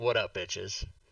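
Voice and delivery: put-on deadpan, dead-level monotone, low. Retelling his answer when the door was kicked open, in a flat monotone.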